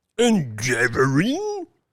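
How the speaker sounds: crying out fiercely. A narrator reads the tyrant's retort to the dwarf, a fierce cry. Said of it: "cried the tyrant, fiercely".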